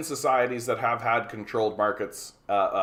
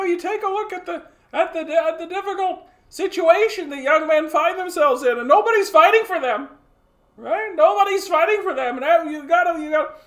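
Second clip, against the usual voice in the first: put-on exasperated voice, higher and louder; 6 dB louder than usual. Imitating a commentator after being asked about it: Jordan Peterson impression. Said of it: "low-effort Jordan Peterson impression".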